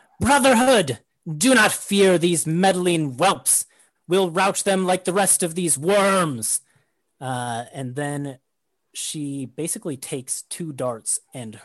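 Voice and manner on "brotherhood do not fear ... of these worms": high-pitched loud battle shout. Game master voicing a foe who spots the party and rallies her Brotherhood, shouting. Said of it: "she shouts out".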